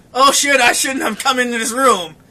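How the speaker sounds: ordinary talk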